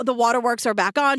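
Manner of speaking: ordinary delivery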